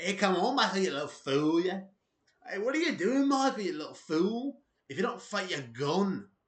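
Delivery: loud, high, rough celebrity impression voice. Conor McGregor, blasted on coke, calls out to Michael, in a not-that-good Conor McGregor impression. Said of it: "that's my Conor McGregor impression".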